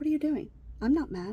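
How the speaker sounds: cool, matter-of-fact, unruffled. Retelling how a student calmly answered a teacher: imitating someone talking calmly. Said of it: "He's talking to him just like this".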